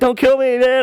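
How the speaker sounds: mock, very high voice breaking through laughter. Retelling a fight over a bike, own words while laughing. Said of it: "I'm just laughing".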